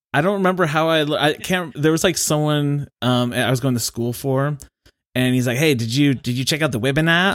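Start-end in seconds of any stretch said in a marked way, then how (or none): 5.6-7.4 put-on Australian accent, higher pitch. Speaker quotes someone asking about a webinar, in an Australian accent. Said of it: "the best thing to say with an Australian accent".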